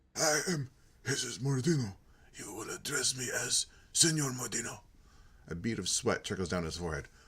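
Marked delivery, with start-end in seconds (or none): 0.1-4.7 raspy, rasping voice, pitched up. Reading a game's dialogue aloud, voicing Jesus Mordino: rasping voice. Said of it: "The man speaks in a rasping voice".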